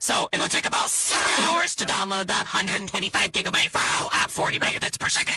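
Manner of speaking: very strange voice sliding into whispered noise.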